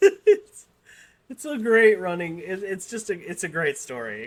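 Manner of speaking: talking through laughter. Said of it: "I'm sorry. I'm easily amused".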